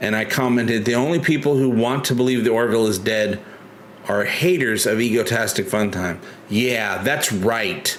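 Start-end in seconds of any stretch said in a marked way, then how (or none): none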